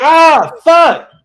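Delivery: very loud, shrill, high yelp of pain. Reacting to a sudden burn on the hand: pained outburst after a burn. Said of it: "did you burn yourself?".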